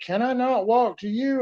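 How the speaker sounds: very high, loud, drawn-out yell. Retelling being shot while yelling to a distant officer: imitating own yell. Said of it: "I'm yelling at him".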